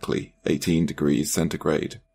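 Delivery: plain reading voice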